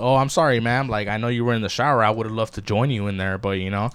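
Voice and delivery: mock-deadpan, straight-faced delivery. Retelling what a man said to a woman just out of the shower, retelling a deadpan line. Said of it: "with a straight voice, like straight face".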